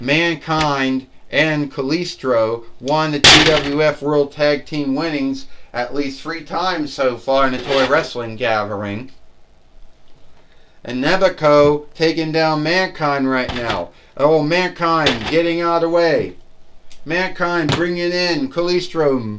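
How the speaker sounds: plain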